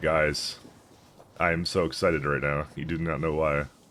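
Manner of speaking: deadpan, flat, one-note monotone delivery. Showing how they announce exciting news to the guys, monotone. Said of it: "in my typical monotone accent".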